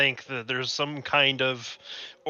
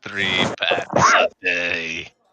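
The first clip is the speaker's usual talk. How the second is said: very low, slow vampire voice, every word drawn out; 8 semitones lower, 4 dB louder than usual. Joking about a vampire's cursed life, answering in a Count Orlok voice. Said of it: "Why do you sound like Count Orlok?".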